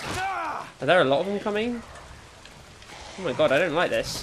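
getting frightened, fear rising. Playing a game, wondering whether more attackers are coming, getting scared. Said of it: "I'm getting scared".

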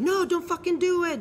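high, loud, pleading cry.

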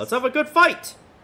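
very high-pitched, loud yell. Voicing a character entering a room with a greeting: yelling. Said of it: "Why are you yelling?".

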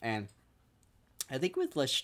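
breaking, cracked voice, cracking mid-phrase. Speaker praising a survival show host, voice cracking. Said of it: "sorry, voice cracked".

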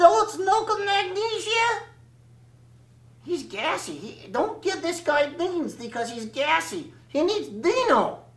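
raspy, hoarse, wisecracking puppet voice. Ventriloquist's puppet talking in a comedy routine, hoarse puppet voice. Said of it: "Well, my name is [name], and I'm an Axtell soft puppet. ... And so that's why I sound a little hoarse right here".

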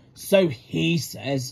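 with a snort. A narrator reads an engine replying to another engine, snorting. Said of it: "snorted Gordon".

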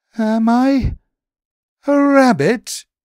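very high, very loud, slow stuttering stammer. As Jazzy D creeps up on him, Daley B replies, stammering. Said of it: "he stammered".

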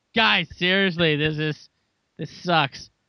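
ordinary delivery

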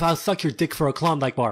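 ordinary talk, nothing marked

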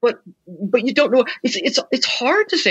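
stuttering. Unsure of an answer in conversation, stuttering. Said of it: "I see I'm stuttering right now".

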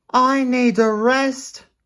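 very high, slow, drawn-out gasp. Narrator reads the engine's line as he pulls into a siding, gasping. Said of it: "Thomas gasped".

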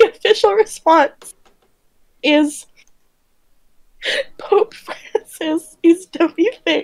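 giggling, laughing through the words. Reading out someone's official response to the other speaker, laughing while reading aloud. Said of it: "I'm laughing what he said".

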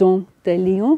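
dent de lion pronounced with French accent. Explaining where a plant's common name comes from: french accent. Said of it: "excuse the French accent".

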